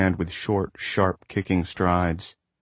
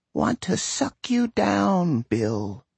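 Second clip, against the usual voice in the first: put-on very high, slow, dry, swooping old woman's voice; 12 semitones higher than usual. Narrator voicing the sand speaking in Bill's mind, in a dry old woman's voice. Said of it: "the dry, arid voice of a woman who was old but still terribly strong".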